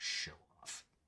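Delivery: hushed, snide whispered mutter under the breath. Standing next to her as he leaves the room, muttering under breath. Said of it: "I mutter under my breath".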